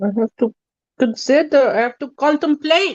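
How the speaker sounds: very bad put-on South African accent. Tired and time blind, the speaker muses aloud in a very bad South African accent. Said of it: "I have started using a very bad South African accent".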